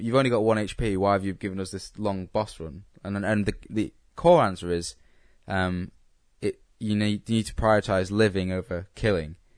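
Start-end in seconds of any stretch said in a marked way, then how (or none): none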